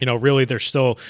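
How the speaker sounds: usual speaking voice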